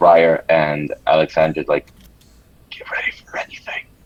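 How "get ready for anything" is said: hushed, barely voiced whisper. Warning two companions in character to be ready: whispering a warning. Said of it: "I whisper to both".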